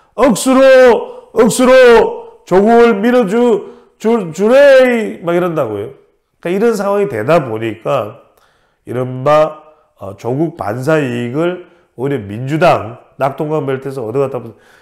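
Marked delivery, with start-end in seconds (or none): 0.2-5.2 loud, drawn-out, very slow Gyeongsang dialect. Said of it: "경상도 사투리로".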